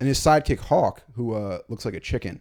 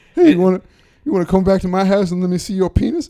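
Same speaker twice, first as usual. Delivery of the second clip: very loud, high-pitched holler, belted out; 8 semitones higher, 9 dB louder than usual. Showing the other speaker how the impression should be done: Eddie Murphy impression. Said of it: "You gotta do it like that".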